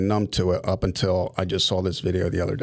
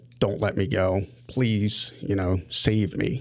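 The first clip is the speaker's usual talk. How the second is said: acted pleading tone, slower. Speaker describes a video of a kid begging the dad: retelling a child's begging. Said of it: "The kid's begging the dad".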